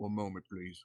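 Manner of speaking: very soft, very low, quiet hush. Playing a character who chugs a potion while eyeing Spectral Strahd, very quiet. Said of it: "And just very quietly saying".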